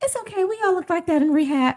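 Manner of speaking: very high-pitched voice. Retelling what a fellow actor said on set: imitating a high-pitched voice. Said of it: "her high-pitched voice".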